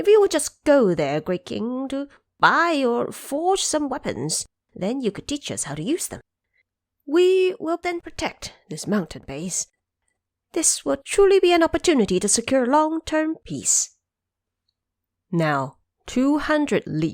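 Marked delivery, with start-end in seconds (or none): 0.0-13.9 put-on old monkey voices, pitched up. Elderly monkeys come forward to address their great king, in elderly monkey advisers' voice. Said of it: "4 elderly monkeys came forward. 2 red-bottomed monkeys and 2 elastic-armed apes approached to say, / 4 elderly monkeys came forward. 2 red-bottomed monkeys and 2 elastic-armed apes approached to say".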